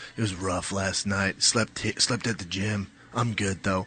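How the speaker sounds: heavy bass voice, very deep and low. Retelling what a sparring partner said when found on the gym couch: imitating Shane's deep voice. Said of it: "Shane has that deep voice".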